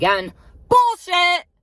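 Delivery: high, loud, slow, riled-up voice. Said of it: "I'm getting a bit riled up here".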